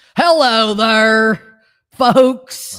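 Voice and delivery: booming, very loud put-on American accent. Joking about trips abroad, talking like a real american. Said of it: "Maybe I should just talk like real American".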